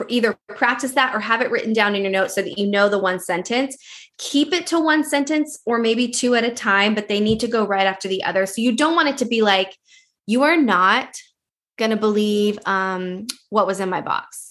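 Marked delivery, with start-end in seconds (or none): 10.3-14.5 choppy, slow, flat, unenthused, halting delivery. Teaching video makers how not to present, demonstrating an unexcited delivery. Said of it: "are you even excited about what's in your box?".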